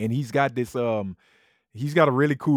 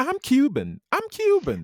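mocking put-on bragging voice, higher. Imitating someone who always bragged about being Cuban, mocking. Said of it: "she would always talk about how, how Cuban she is".

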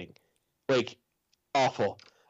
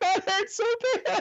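acted, very high-pitched laughing speech. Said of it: "I'm laughing after each time".

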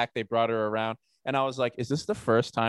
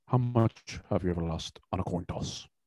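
menacing, threatening film-villain voice; 5 semitones lower, 5 dB quieter than usual. Quoting a film line to the others, Javier Bardem impression. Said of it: "here's my Javier Bardem impression".

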